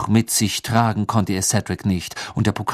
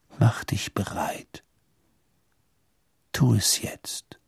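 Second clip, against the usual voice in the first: hushed, breathy, barely voiced whisper; 7 dB quieter than usual. A father's voice urges his son on, whispering. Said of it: "flüsterte die Stimme seines Vaters".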